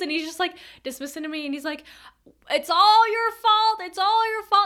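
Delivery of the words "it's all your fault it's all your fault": repeated high, loud shouting. Retelling a man's words as he walks away: imitating someone shouting. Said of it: "he keeps shouting it".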